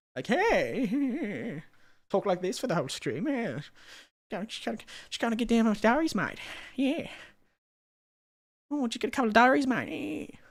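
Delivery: deliberately grating manic voice, drawn-out "hey". Streamer tries out a voice to use on stream, deliberately annoying voice. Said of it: "make my voice really annoying".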